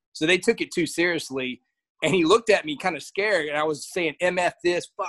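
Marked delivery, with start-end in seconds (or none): 4.2-5.1 put-on yell, slower. Recounting a game against a team that took it too seriously, retelling a yell. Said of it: "I yelled".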